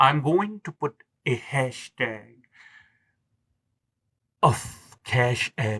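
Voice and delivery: very slow, deliberate, word-by-word delivery. Speaker asks listeners for help through cash app, very slow. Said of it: "I'm trying to speak it as slow as humanly possible".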